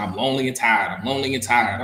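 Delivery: normal talking voice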